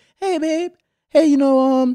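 very high, light, airy little voice. Retelling their own words to their partner about their house, very light voice. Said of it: "with a very light voice".

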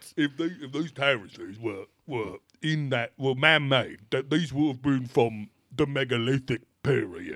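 put-on thick Cockney accent, laid on heavy. Quoting an author on a show about Glastonbury Tor: imitating a Cockney accent. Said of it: "very South England Cockney as fuck dude".

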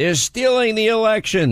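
mock alarmed screaming, pitched way up. Retelling how a congressman screamed at him: imitating Joe Scarborough screaming. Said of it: "was the guy that was screaming at me".

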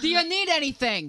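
put-on New York accent. Reading a friend's text aloud in her accent: imitating a friend's New York accent. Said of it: "I'll read it in that accent in my head".

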